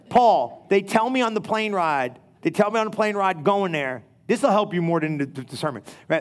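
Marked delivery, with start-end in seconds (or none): none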